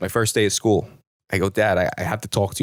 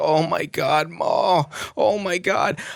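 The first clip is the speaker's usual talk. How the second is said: long, high moans stretched very slowly; 9 semitones higher than usual. Retelling hearing father in the laundry room at night: imitating father moaning. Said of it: "I hear him continue to moan and moan".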